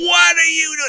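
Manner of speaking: shrill, very high holler at the top of the lungs. Man retelling what he hollered when the wires plugged him in: retelling a holler. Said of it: "I hollered out to the top of my lungs".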